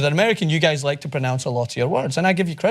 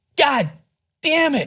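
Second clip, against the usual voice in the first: very high-pitched put-on American voice; 12 semitones higher than usual. Told they can't curse in an american accent, the speaker tries: put-on american accent. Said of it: "like you can't curse in an American accent".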